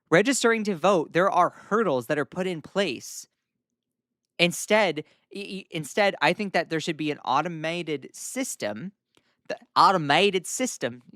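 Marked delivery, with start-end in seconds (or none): 9.4-10.9 strong American southern accent. Speaker laying out a voting proposal, sounding really southern. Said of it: "I sound really southern".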